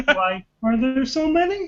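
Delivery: put-on high-pitched frog puppet character voice. Trading impressions among friends, doing a Kermit the Frog impression. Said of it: "That's a really good Kermit the Frog!".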